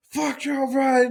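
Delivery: high, screaming shout like a rowdy crowd. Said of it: "screaming at each other".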